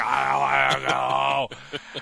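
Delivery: put-on deep scream. Carrying him toward the woods, the speaker is imitating Nathan's deep scream. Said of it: "his voice drops like three octaves".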